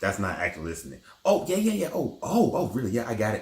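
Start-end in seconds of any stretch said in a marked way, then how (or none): 1.2-3.4 keen, over-eager, pitched-up interjecting. Showing what interrupting is during a talk on listening: showing someone interrupting eagerly. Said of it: "Active listening is not always interrupting somebody".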